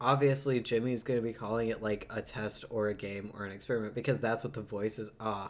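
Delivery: ordinary delivery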